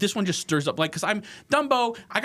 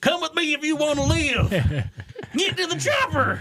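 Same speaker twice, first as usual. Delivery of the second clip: very high rural German accent; 12 semitones higher than usual. Imagining his movie lines said in german, in a rural german hick accent. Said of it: "he sounds like a hick".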